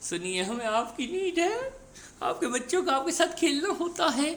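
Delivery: very high, tender, loving, coaxing and pleading tone. Retelling a scene, repeating own earlier words, acting out saying lovingly. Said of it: "कितना प्यार से बोला".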